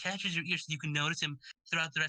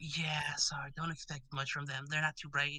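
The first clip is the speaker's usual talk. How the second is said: acted-out mock whisper; 2 semitones lower than usual. Acting out parents speaking to a camp counselor: acted-out whisper. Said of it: "whisper to the counselor".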